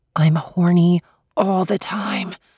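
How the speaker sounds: wailing whisper. Sophie, answering a question put to her: wailing whisper. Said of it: "Sophie wails in a whisper".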